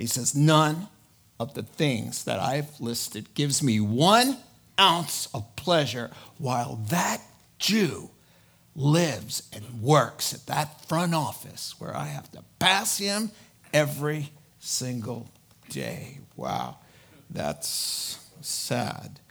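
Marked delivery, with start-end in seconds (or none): 0.3-16.2 dropped, low, grave, deadly serious voice. Retelling the verse 13 confession, speaker voices the man's words: dropped, very serious voice. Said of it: "his voice drops, and he gets a very serious tone".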